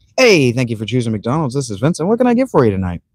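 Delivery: smiling headset voice. Showing chat viewers his McDonald's drive-thru greeting, smiling headset voice. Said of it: "my headset voice ... you can hear a smile".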